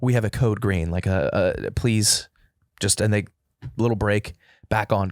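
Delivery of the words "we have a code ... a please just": mock-nervous, trembling intercom-style voice. Retelling a Whole Foods intercom announcement of a code green: imitating a trembling intercom voice. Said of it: "it's like a trembling voice".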